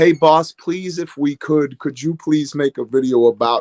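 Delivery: put-on humble, polite, pleading tone. Retelling how the other team members ask: imitating pleading team members. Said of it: "most of the rest of them are kinda like".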